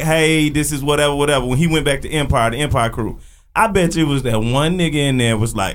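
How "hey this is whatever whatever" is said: ordinary talk, nothing marked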